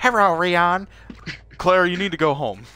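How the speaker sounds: high, put-on Chinese accent. Doing an impression while playing the game: put-on Chinese accent. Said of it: "you wanna see my impression?".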